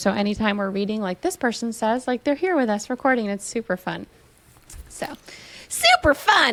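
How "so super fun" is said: high, swooping square dance caller voice. A host recording with a co-host repeats a remark, like a square dance caller. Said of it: "It sounded more like you were um, a caller at like a square dance".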